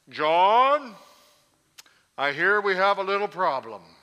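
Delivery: very loud, booming, giant-sized voice with a drawn-out name. Retelling how the bishop spoke to him about a problem, Bishop Handy's big booming voice. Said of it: "had a big, booming kind of voice".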